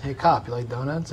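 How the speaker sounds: plain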